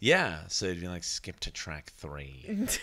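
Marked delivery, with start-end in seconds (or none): 1.0-2.7 very quiet, low, hushed, swooping cartoon villain voice. Acting out their dad Paul in the car: imitating Paul, villain-like. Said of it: "Why does he sound like a villain?".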